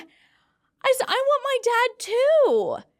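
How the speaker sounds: sobbing wail, very high and overly drawn out. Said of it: "I started bawling my eyes out".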